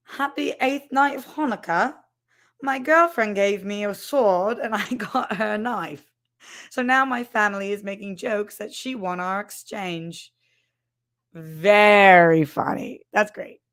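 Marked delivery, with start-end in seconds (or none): 0.1-10.3 clumsy, awful, bad put-on British accent. Reading a viewer's message aloud as Hanukkah Harry: bad British accent as Hanukkah Harry. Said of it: "I feel like Hanukkah Harry's British".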